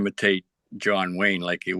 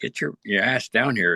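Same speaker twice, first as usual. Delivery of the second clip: plain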